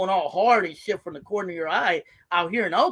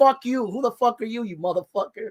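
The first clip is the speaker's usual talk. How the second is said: put-on, fake New York accent; 4 semitones higher than usual. Retelling a phone call with a New Yorker, put-on New York accent. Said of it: "Let me take the accent".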